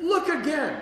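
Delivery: yelling loudly. Retelling yelling at a woman at the hospital, retelling a yell. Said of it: "and I'm yelling at her".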